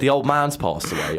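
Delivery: ordinary talk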